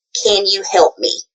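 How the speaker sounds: ordinary talk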